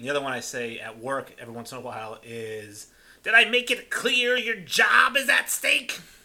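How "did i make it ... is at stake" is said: very high, loud, shrill squealing voice. Showing a film line sometimes repeated at work, in a Wallace Shawn impression. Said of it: "So that's my Wallace Shawn impression".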